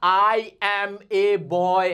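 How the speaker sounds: put-on heavy stress on every word of I am a boy. Showing learners the wrong way to stress words: heavy stress on every word. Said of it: "stress का मतलब जैसे बोल दूंगा ... ऐसे नहीं बोलना".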